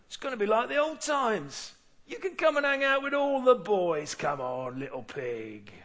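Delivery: put-on London gangster accent. Voicing the pig's old friends calling to him: london gangster accent. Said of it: "they talk like London gangsters".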